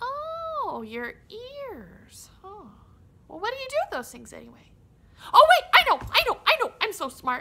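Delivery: squealing voice, "oh" stretched out. Reading a story where Timothy Mouse mishears Scout and guesses; Timothy Mouse voice. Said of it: "Timothy Mouse was sitting in the middle of his farmhouse".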